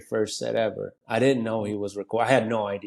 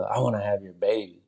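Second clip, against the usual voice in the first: whispered voice at a much lower pitch. Recounting what a woman said while taking a picture, retelling a whisper. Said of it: "she whispers".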